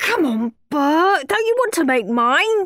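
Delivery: pleading. Henry asks bert to make his with him, pleading. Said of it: "pleaded Henry".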